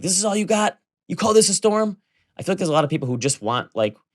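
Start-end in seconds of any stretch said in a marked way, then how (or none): 0.0-2.0 very high, high-pitched mock screaming. Retelling the storm scene with Lieutenant Dan on the mast: imitating Lieutenant Dan screaming. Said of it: "he's screaming".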